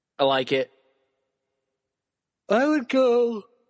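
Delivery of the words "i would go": words spoken through a yawn, pitched up. Picking a player after a long day at work, the speaker trails off: yawning while talking. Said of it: "Sorry, I'm yawning".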